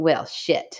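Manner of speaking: put-on bratty little girl voice. Retelling what a little girl said to Mom: imitating a bratty little girl. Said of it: "this little bratty girl go".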